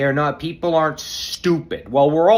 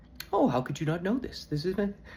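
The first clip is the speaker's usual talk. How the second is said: smug, condescending, lecturing tone; 4 semitones higher, 9 dB quieter than usual. Imitating J D talking down at people: imitating J D, condescending. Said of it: "like he's standing on top of the bar and talking down at you".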